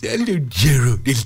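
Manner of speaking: doggy put-on voice. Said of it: "Can you do that doggy voice".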